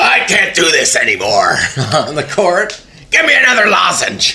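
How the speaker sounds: hoarse, gravelly coach voice.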